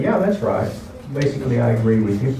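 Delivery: ordinary talk, nothing marked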